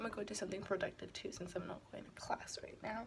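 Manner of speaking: quick hushed whisper. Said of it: "I was like".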